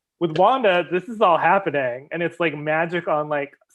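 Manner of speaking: plain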